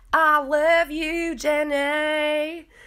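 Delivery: botched put-on character voice, very high, very slow, drawn-out. Retell Brittany speaking to Jax's sister on a call, in a bad Forrest Gump voice. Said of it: "Why is my Forrest Gump so bad?".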